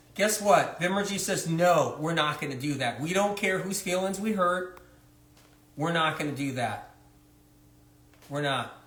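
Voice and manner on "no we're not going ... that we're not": usual speaking voice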